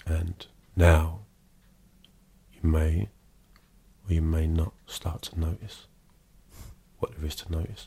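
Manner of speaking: real deep, slow, trance-inducing hypnotist voice. Retelling how a hypnotist put people into trance, imitating his real deep tone. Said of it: "he'd have a real deep tone like".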